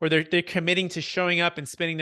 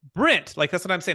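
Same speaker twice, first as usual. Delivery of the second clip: ordinary talk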